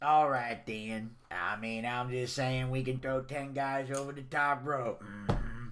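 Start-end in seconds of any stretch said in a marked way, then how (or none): 1.3-5.7 put-on yeehaw-style Southern accent. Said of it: "you know, yeehaw".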